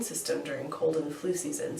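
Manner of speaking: plain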